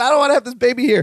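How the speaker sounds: high, fast, panicked outburst.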